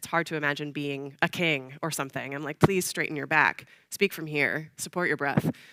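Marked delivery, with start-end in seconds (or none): none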